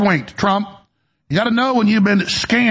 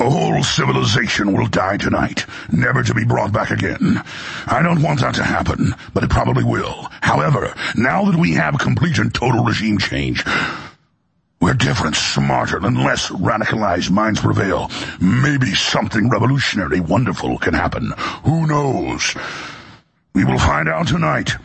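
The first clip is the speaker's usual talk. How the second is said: very deep, low-pitched villain voice; 10 semitones lower than usual. Reading out a statement by President Trump on a show, in a Darth Vader voice. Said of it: "Let's do this in Darth Vader's voice".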